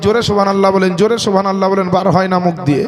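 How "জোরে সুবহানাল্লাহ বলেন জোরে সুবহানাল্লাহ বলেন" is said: plain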